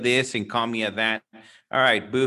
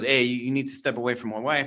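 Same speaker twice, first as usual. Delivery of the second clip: imitated tough, old gangster voice. Retelling how a husband on a train warned a loud man: imitating a tough old gangster. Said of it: "He goes".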